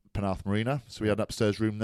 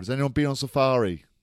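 put-on shout, higher and louder; 3 semitones higher, 3 dB louder than usual. Recounting a man at an event asking the crowd a question, retelling a shout to a crowd. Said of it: "He's shouting to the crowd".

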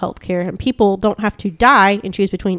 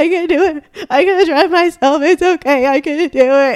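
mock crying, high sobbing through the words; 8 semitones higher, 4 dB louder than usual. Retelling answering John, who offered a hospital ride: imitating own sobbing while talking. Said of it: "And I'm just like sobbing".

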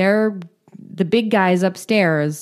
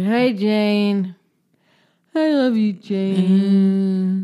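deliberately slurred put-on voice. Retelling a story, Michael phones Jane while high on pills: imitating Michael's drunk slurring. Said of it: "He's slurring".

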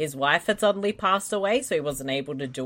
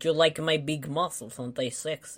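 bad fake Russian accent, much quieter; 3 dB quieter than usual. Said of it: "my terrible Russian accents".

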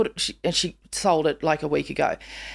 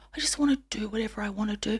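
quick quiet whisper. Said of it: "she's whispering it".

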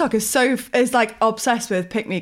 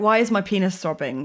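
usual speaking voice

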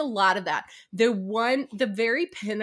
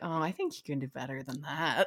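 very low, hushed, sly and teasing; 8 semitones lower, 8 dB quieter than usual. Retelling a fight scene where he teases her, imitating a sly tease. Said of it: "being all sly".

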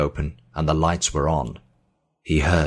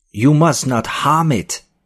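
piercing, shrill, very high cry; 10 semitones higher, 6 dB louder than usual. A man objects to what will be done with the map, shrill voice. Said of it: "his voice shrill".

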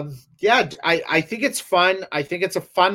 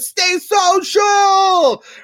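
mock very high, loud yell from afar; 6 dB louder than usual. Retelling how someone in the community calls out: imitating someone yelling out. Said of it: "someone yells out".

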